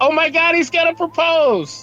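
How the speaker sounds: very loud, very high, slow, drawn-out carrying shout. Interrupting a character in a game scene, shouting very loudly. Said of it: "Very loudly".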